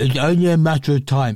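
muffled, thick voice as if mouth is stuffed full. Quoting a man's claim and doing his voice, talk like a mouth full of cheese. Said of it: "He talks like he's got a mouth full of cheese".

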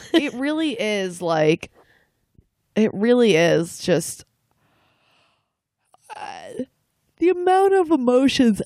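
talking through a yawn. Talking about dating and emotions, yawning while talking. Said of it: "I'm yawning, sorry".

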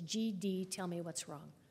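ordinary delivery

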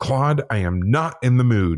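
exasperated, slow, deliberate yell. Retelling yelling out while the room was shaking: imitating own past yell. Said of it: "So I yelled out".

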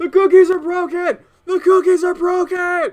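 very high, loud, frantic, panicked shrieking. Voicing panicked gingerbread men running around: gingerbread men screaming in panic. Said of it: "are now screaming and".

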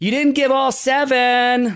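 mock, very high heckling yell, "seven" stretched long. Retelling a sister calling out from the front row: imitating sister yelling. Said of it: "my sister yells from the front row".

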